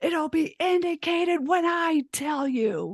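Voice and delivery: high, screaming, angry put-down. Retelling a caller screaming back at them on the phone, imitating the scream. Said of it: "she screamed at me on the phone".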